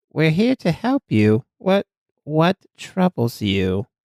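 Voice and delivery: kind, careful, gentle and caring tone. A game character steps closer to someone holding a doll, speaking softly. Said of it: "As you s- speak softly to her".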